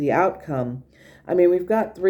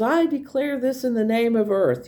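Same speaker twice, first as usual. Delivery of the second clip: mock triumphant, grand, pitched-up voice; 7 semitones higher than usual. Retelling a cartoon scene where a character claims the ground: imitating a triumphant declaration. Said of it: "triumphant and victorious".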